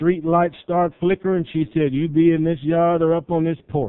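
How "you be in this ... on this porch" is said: normal talking voice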